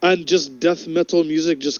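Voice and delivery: ordinary delivery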